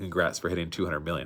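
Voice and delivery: normal talking voice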